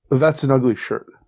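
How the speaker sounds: plain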